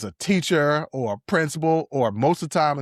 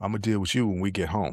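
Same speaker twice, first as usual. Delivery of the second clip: put-on, very calm speaking voice; 5 semitones lower, 4 dB quieter than usual. Acting out a mother at a store speaking to her child, imitating very calm speech. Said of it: "she says to you very calmly".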